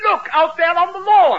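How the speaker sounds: shouted high and loud, excited.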